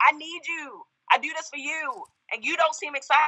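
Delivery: high, hurt, pleading cry.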